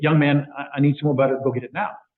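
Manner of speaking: put-on rude, demanding tone. Retelling how a man called over the waiter for butter: mock-rude demand. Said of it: "I very rudely called over the waiter".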